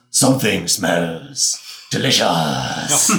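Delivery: loud, growling monster voice. Game narrator voicing a colossal fiery creature rising from a chasm, growling creature voice. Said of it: "And it growls".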